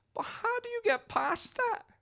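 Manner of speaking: absolutely heartbroken, very high-pitched voice. Retelling what a heartbroken woman said, imitating a heartbroken voice. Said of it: "like absolutely heartbroken, just goes".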